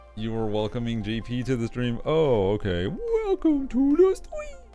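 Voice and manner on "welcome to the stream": drawn-out, stretched voice like whale calls. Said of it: "are you Dory trying to speak whale?".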